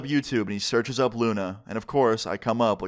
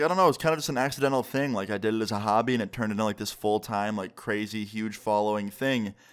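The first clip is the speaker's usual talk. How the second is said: ordinary talk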